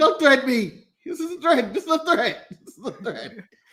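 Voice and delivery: insistent, jittery, paranoid tone, each repeat pressed, sure. Acting out the segment as a sitcom character: imitating Charlie shouting. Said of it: "very Charlie in here to be like".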